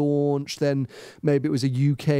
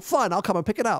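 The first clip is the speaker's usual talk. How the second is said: bad put-on matter-of-fact voice, pitched higher; 6 semitones higher than usual. Retelling a phone call with the Ferrari PR, bad impression of Jason. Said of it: "that was a bad impression of Jason".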